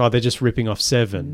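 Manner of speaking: ordinary delivery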